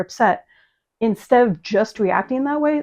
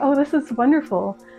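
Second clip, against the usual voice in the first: emotional, moved, heartfelt, happy delight; 3 semitones higher than usual. Explaining how happy people react, demonstrating an emotionally happy reaction.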